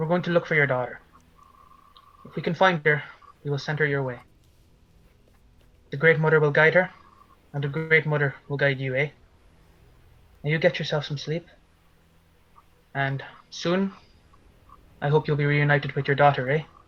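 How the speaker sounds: as calm as possible, very calm voice. Voicing a character comforting a woman about her daughter: as calmly as he can. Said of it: "as calmly as he can".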